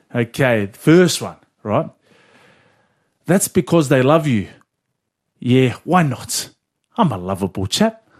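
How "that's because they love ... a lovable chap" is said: put-on New Zealand accent. Giving a movie quote for a guessing game, said in an accent. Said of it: "If you didn't say it in that accent".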